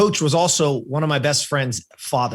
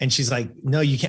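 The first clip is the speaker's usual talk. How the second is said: ordinary talk, nothing marked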